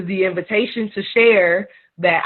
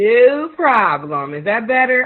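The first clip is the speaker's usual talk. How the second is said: loud, slow, projecting teacher voice; 3 semitones higher than usual. Repeating a reply after the other speaker can't hear well: loud teacher voice. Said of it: "I just need to use my teacher voice".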